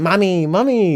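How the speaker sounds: exaggerated put-on Latin American accent. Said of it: "I feel like they don't actually talk like that".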